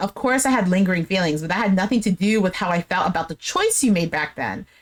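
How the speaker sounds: ordinary talk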